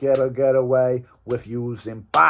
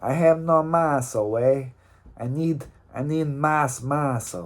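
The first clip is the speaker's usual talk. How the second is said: clumsy, bad, fake put-on Mexican accent. Speaker acts out a joke character, in a bad Mexican accent. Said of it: "that's not a good Mexican accent".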